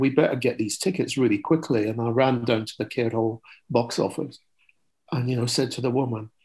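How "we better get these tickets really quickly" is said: plain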